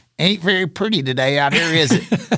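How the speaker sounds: nasal wah-wah voice, pushed through the nose. Retelling what his hero said standing over the ball, nasal Jack Nicklaus voice. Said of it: "It was really a nasally kind of wah".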